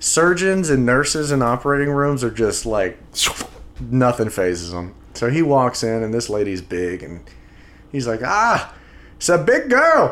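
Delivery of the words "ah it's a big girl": high, slow, drawn-out Irish leprechaun voice. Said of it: "he's Irish and just, like, talking like a leprechaun".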